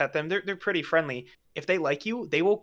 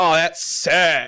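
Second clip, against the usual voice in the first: loud Californian surfer drawl, vowels stretched; 8 dB louder than usual. Imitating Californian friends who say words super long: imitating drawn-out Californian accent. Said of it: "pronounce words, like, super long".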